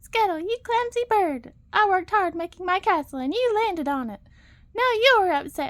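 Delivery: high, loud, squeaky little put-on voice. In a story, a character pretends to be Ariel, scolding the bird: high squeaky Ariel imitation. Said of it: "he said in a high, squeaky voice".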